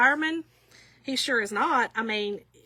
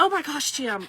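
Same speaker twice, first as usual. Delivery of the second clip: acted panicked speech; 3 semitones higher than usual. Shonda quotes what she said to jim in the moment; retelling her panic. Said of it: "I was panicking".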